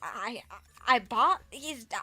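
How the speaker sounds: put-on heavy stuttering speech. Retelling what a stuttering customer said: imitating a customer's heavy stutter. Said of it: "she's stuttering, like, a lot".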